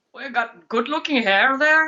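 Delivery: fake Irish or Scottish accent. Answering a viewer's request for an accent: put-on Irish accent attempt. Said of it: "an Irish or Scottish accent".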